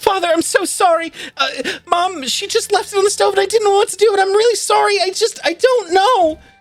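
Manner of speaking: very high, teary, tearful, remorseful voice. Playing Thessalia, apologizing to Father with big tears falling: Thessalia crying, apologizing. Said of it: "Big, big tears just kind of falling down her face".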